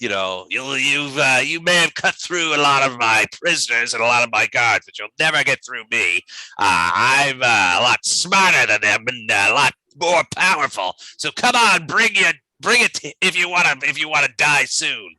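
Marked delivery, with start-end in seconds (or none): 1.4-15.0 taunting, mocking villain creature voice, higher. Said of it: "taunting you".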